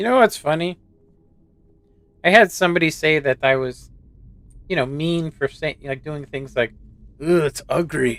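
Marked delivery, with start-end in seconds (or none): 7.2-8.2 put-on Chinese accent. Speaker recalls being called mean, impersonating a Chinese person. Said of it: "that's my impersonation of Chinese person".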